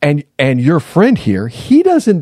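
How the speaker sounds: high, loud, angry yell. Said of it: "yelling something about me".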